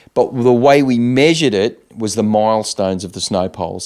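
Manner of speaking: ordinary delivery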